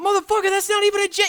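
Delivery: very loud, very high, shrill, raw exasperated outburst. Retelling a friend's reaction to a bad guess: imitating a raw emotional outburst. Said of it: "the raw emotion that you displayed".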